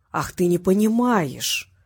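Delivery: slow, drawn-out, mocking, taunting drawl. Vasiliev, on the phone, answers the bewildered Gorshkov: drawling mockingly. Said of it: "протянул с издевкой Васильев".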